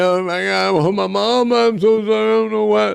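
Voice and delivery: high, tearful, mock blubbering through tears. Imitating someone crying at the police station: imitating someone crying. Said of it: "you crying".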